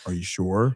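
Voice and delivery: scared, frightened, fearful tone. Retelling how Omni-Man really says the line: imitating Omni-Man sounding scared. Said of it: "he says it more like".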